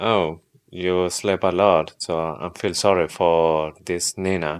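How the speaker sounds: usual speaking voice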